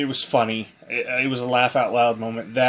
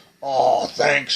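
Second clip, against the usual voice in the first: put-on deep masculine old man biker voice; 2 semitones higher, 3 dB louder than usual. Retelling a cute creature's reply to Lance: imitating a deep old man biker voice. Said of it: "this deep old man, you know, biker voice".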